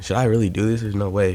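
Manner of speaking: ordinary talk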